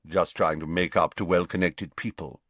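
ordinary delivery, nothing marked

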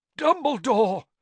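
loud, very high gasp. A man in distress seizes a boy's robes, gasped. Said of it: "gasped Mr. Crouch".

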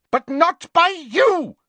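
furious, very high voice. Cutting in on another speaker to lay blame, furiously. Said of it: "said Bellatrix furiously".

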